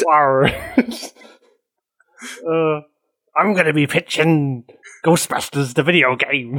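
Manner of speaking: put-on pirate accent with an arr. A speaker, asked to pitch a video game, gives the pitch in a pirate accent. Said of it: "let us know what you're going to pitch in your pirate accent".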